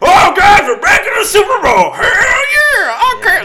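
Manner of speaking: very high, loud cartoon shout with drawn-out yeah. Imitating Mahomes celebrating a Super Bowl trip: Mahomes cartoon voice. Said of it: "the cartoon voice they always do for him".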